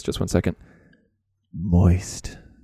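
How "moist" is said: low, close-to-the-mic radio voice. Getting super close to the mic to say one word in NPR voice. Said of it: "I'm going to get super close to the mic and use my NPR voice".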